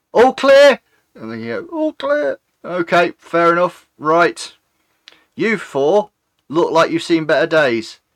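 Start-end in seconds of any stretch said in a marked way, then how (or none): 2.7-8.0 put-on stiff elderly militia chief voice with attitude. Voicing the town's militia guard, addressing a group of four: town militia guard character voice. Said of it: "He is the town guard, a gentleman, quite late of years, silvery hair, absolute attitude. He walks very stiff up. His name is [name], the militia guard of the town, the sort of head".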